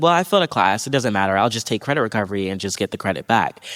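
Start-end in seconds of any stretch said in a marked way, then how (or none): none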